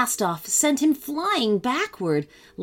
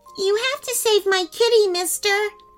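put-on little girl's very high, shrill yell; 11 semitones higher than usual. A little girl calls up from below to a firefighter, yelled. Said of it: "a little girl yelled from below".

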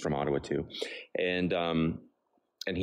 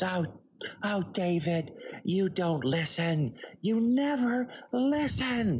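mock very high, stretched-out, slow scream; 13 semitones higher than usual. Retelling the mom's complaint to the dad at dinner: imitating mom screaming. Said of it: "You don't scream at me".

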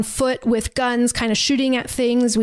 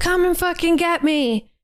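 mock screaming, pitched much higher; 6 semitones higher than usual. Speaker recounting a man screaming from an open car door, retelling a scream. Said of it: "starts screaming".

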